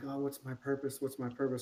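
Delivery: ordinary delivery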